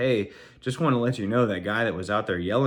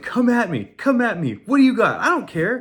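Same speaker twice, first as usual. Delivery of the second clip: mock yelling like a kid, much higher, slower; 12 semitones higher, 7 dB louder than usual. Retelling a confrontation where a kid yelled at the speaker, imitating the kid yelling. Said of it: "he starts yelling and telling me".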